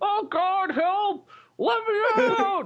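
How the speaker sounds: very high, very slow, drawn-out, far-off-sounding cry. Imagining a trapped man calling from inside the ATM: imitating a distant cry for help. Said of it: "you hear in the distance just like".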